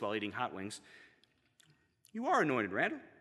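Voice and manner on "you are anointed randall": soft, even, happy monotone on one note. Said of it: "in that happy monotone voice".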